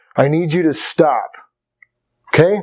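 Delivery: earnest, somewhat serious, meaning-it voice. Demonstrating to listeners how a request sounds in a somewhat serious tone. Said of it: "you can tell by the tone of my voice that I'm somewhat serious".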